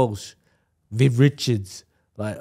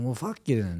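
put-on mumbled aside under the breath, quieter; 7 dB quieter than usual. Retelling walking away after being brushed off: imitating muttering under breath. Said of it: "Under me, mouth".

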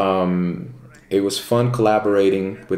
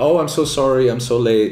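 put-on apologetic tone, higher pitch; 4 semitones higher than usual. Retelling how a late-arriving model apologized on walking in: imitating someone apologizing. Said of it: "she's apologizing".

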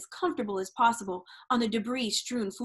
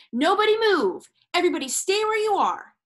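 loud, high-pitched shout; 8 semitones higher, 6 dB louder than usual. A man rushing into a crackling kitchen after a bomb goes off, shouting. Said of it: "shouted as he rushed".

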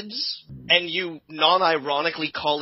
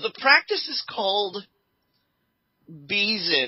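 swooping, barely held-back laugh, fighting straight face; 4 semitones higher than usual. Naming a new teenage trend, holding back a laugh. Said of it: "I'm having real trouble actually saying this with a straight face".

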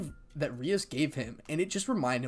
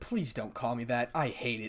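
plain reading voice

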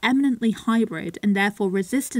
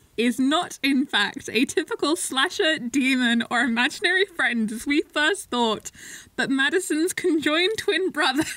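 laughing, much higher pitch; 5 semitones higher than usual. Reading a plot summary of Malignant aloud, laughing while speaking. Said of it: "I can't stop laughing".

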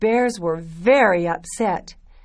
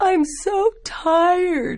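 words spoken through a yawn, pitched very high; 11 semitones higher than usual. Goldilocks picks herself up after the tiny chair breaks, yawning. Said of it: "she yawned".

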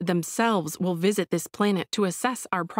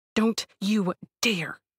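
furious, angry hissed voice. A narrator reads a woman's reply to the first-person narrator, angry hiss. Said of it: "she hisses at me".

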